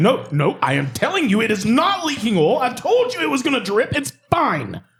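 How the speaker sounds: very high, insistent scolding lecture. Imitating a coworker scolding a client about an oil leak: imitating a scolding dad voice. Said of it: "And he's like".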